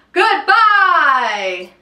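all-out, loud, drawn-out shout at full volume. Leading listeners in a goodbye rhyme, saying it as loud as possible. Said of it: "Let's say goodbye as loud as we can".

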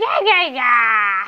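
very loud creature cry, each yeah stretched out. Imitating how a character in the game sounds, in a Pokemon-like voice. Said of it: "She sounds like a Pokemon".

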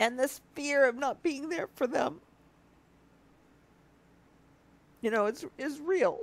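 teary voice, crying while speaking. A late mom opens up about her family, crying. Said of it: "I'm so sorry that I'm crying".

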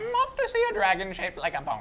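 very high, swooping, rambling crazy wandering-traveler voice. Speaking in character as the traveling guy during play; crazy rambling traveler voice. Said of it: "I'm talking like the crazy rambling traveling guy".

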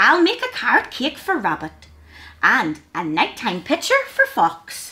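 ordinary delivery

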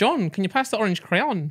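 high-pitched put-on Welsh accent. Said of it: "when we did Welsh accents".

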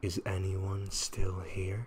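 soft, hushed, echoing ghost voice. Telling a ghost story, voicing the ghost's question: soft ghostly voice. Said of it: "her soft voice always echoes the same question".

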